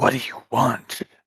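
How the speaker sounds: threatening, hostile goblin voice. Narrator voices a hobgoblin levelling its blade at a player; hostile hobgoblin voice. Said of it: "a hobgoblin shoots out".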